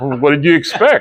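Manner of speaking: put-on sarcastic tone. Retelling how a coach answered praise for a putt: imitating Ron Costello being sarcastic. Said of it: "being sarcastic".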